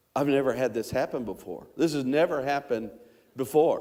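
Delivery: ordinary delivery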